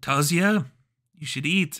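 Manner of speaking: loud, put-on old Polish grandmother voice. Player voices her character's inner beast talking to the character; old polish grandmother voice. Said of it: "My beast sounds like an old Polish grandmother".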